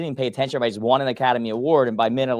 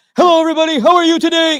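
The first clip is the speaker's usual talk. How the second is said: over-the-top fake newscaster voice, very high, very loud; 9 dB louder than usual. Speaker mocking people who suddenly switch into a news voice, fake news voice. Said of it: "news voice".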